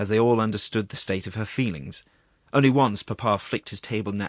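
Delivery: plain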